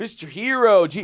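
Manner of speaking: very loud, high-pitched, brash taunting. Retelling a stranger taunting them on the street, voice like Bobby Kelly. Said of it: "What are you, Bobby Kelly at the beach?".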